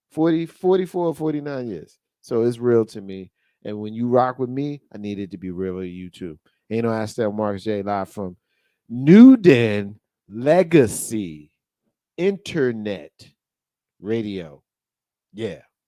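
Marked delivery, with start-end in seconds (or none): 8.8-14.6 very slow, halting, deliberate, word by word, raised. A radio host announces the show, said slowly. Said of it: "Said it slow because I wanted you to hear it".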